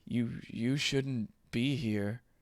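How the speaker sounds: barely voiced, very quiet, hushed words. Narrator voicing a figure staring at everyone in the room, speaking silently. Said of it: "silently says".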